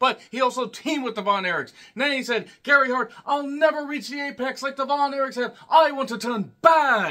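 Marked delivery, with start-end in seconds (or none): 2.6-7.1 bad put-on British accent, pitched up. Retelling what a wrestler once said, in a terrible british accent. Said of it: "That's a terrible British accent".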